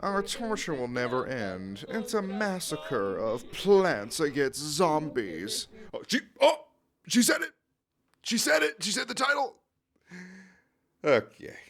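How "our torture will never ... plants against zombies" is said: slow, small voice with a drawn-out delivery. Playing Plants vs. Zombies, voicing Hypnoshroom as a little incel. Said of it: "I'm making her sound like a little incel".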